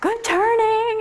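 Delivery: very intense voice, high and loud.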